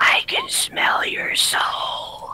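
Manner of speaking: eerie, slow, drawn-out creepy whisper. Voicing a character looking over her shoulder at another: creepy voice. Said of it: "very creepily, and says".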